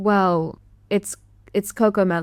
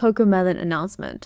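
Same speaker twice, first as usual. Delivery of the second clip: usual speaking voice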